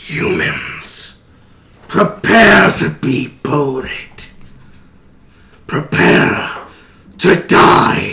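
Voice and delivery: slow, guttural, growling creature villain voice. Voicing the Aqua Princeps heard somewhere on the ship: guttural voice. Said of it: "a guttural voice somewhere on the ship".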